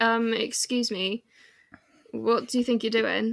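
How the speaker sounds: usual speaking voice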